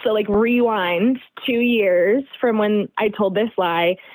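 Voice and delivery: ordinary talk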